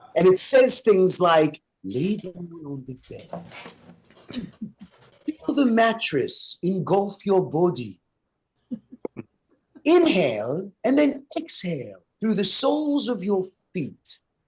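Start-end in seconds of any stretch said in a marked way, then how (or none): 1.9-14.2 put-on soft, snooty, proper upper-crust British accent. Describing the voice that tries to talk you to sleep, quoting it: proper upper-crust British voice. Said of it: "a proper upper crust British voice".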